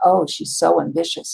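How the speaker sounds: acted-out judgmental tut-tut tone, negative inflection. Recalling how ambition was a dirty word in eighties sales: mock-disapproving tone. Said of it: "it was stated in inflection that it was negative".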